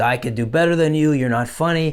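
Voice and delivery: imitated drunken voice. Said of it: "he's drunk".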